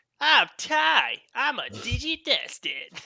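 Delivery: put-on very high, very slow, swooping cartoon kid voice. Recalling watching Digimon as a kid, quoting the show's line; high-pitched Digimon voice. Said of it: "having just that high pitched voice of".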